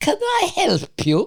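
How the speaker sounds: very high, put-on, terribly proper English accent. Mother greeting people as a consulate receptionist, in her most English-speaking voice. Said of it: "In her most English-speaking voice".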